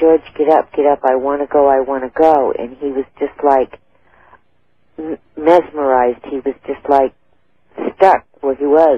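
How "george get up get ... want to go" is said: plain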